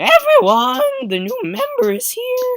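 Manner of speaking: very high, loud belting voice with cracking pitch. Voicing Sayori as she opens the club classroom door, Sayori voice, super voice-cracky. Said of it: "I'll give her a s- super voice cracky voice".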